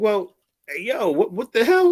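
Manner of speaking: put-on laughter while talking. Retelling a reaction to a stranger boasting about a fight, laughing while retelling own words. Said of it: "I'm laughing".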